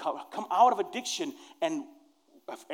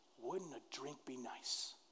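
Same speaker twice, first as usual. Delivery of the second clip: very quiet, soft, coaxing, tempting half-whisper; 5 semitones lower, 20 dB quieter than usual. Acting out a tempting inner voice offering a drink: imitating a half-whispering inner voice. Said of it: "just a whisper".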